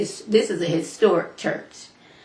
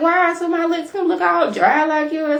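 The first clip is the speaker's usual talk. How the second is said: put-on little girl voice, higher and louder; 10 semitones higher, 4 dB louder than usual. Retelling what a little girl said, imitating Heavenly's voice. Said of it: "I'm doing Heavenly's voice".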